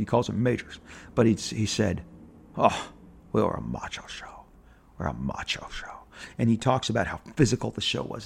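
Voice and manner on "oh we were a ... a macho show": low, breathy, authoritative voice. Quoting a line from a documentary: Richard Anderson impression, lower register. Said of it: "I'm not doing it justice".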